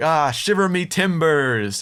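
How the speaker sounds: awkward, high-pitched, slow, drawn-out delivery. Retelling a film scene where pirates cheer: awkward Murtaugh and Mulroy voice. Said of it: "so awkwardly like".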